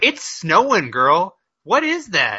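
disbelieving tone. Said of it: "they're like".

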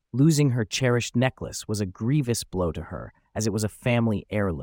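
ordinary delivery

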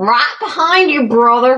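mock American Southern accent. Speaking in character as Ragnar to a companion: Ragnar with a southern American accent. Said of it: "Is Ragnar now from the south of America?".

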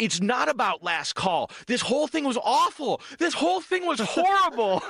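put-on, escalating, very high-pitched rising yell. Retelling walking past a woman yelling about last call, retelling a yell. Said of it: "Did you start yelling Attica?".

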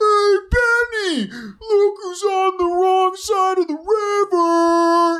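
mock very high, drawn-out, long-carrying yell. Retelling the same scene, imitating O'Connell yelling back across the river. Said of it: "O'Connell yells back".

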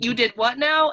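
mock calling out, as if shouting from far away. Recounting a TV scene shouted across a field: imitating someone shouting. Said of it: "it's being shouted across the field".

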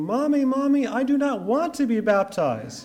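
put-on very high, shrieking little-kid scream. Retelling a young child being brought to baptism: imitating a child screaming. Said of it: "he's screaming".

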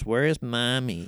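put-on whiny child voice. Mocking a bad child actor's line: imitating Abel's child actor. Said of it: "he's always looking at the camera and going".

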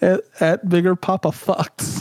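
talking through laughter. Reading out a joke account name to listeners, laughing while talking. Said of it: "I wish you would have done it without laughing".

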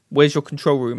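authoritative commanding voice. Retelling a line from the episode: imitating the Doctor's authoritative tone. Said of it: "And he's really authoritative".

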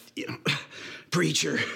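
sheepish, embarrassed, half-swallowed mumble under the breath. Telling a story, acting out a preacher answering the diner owner, retelling an embarrassed mumble. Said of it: "embarrassingly mumbled under his breath".

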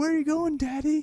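loud, very high-pitched, shrill, obnoxious voice. Retelling a prank, imitating Tom Green being obnoxious. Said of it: "the old Tom Green thing".

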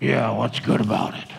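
mock surly, grumpy grumble in very low voice. Retelling a man's reply after barely making eye contact, mock-grumpy retold reply. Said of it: "said in a grumpy voice".

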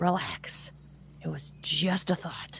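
muttered under the breath. Unsure how far away Bonnie is, the character mutters to themself under breath. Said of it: "I'm just going to kind of like mutter under my breath".

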